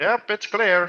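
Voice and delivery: tiny, faint, high-pitched little voice, kept small. Voicing Sornin answering whether the entrance is clear, tiny Sornin voice. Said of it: "you hear a very minute voice from Sornin".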